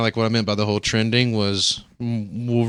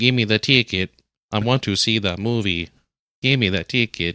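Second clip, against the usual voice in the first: voice like an automated talking phone. Joking about buying a movie ticket: Stephen Hawking voice. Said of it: "freaking Stephen Hawking ticket".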